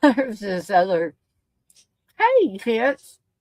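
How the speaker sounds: talking with mouth full, eating while talking. Eating birthday cake while greeting viewers, talking with mouth full. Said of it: "Sorry, I had my mouth full there".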